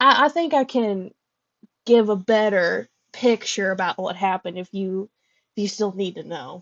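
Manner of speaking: gentle, slight, light and airy Southern lilt. Voicing a woman character who looks up at you and speaks, southern accent. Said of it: "she's southern now".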